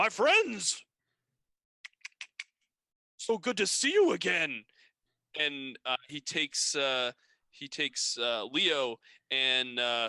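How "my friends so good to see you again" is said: big, resounding, loud, swooping booming voice. A voice calls out from behind the junk piles in a story, booming voice. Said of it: "you hear this bo- booming voice".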